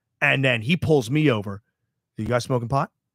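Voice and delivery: ordinary delivery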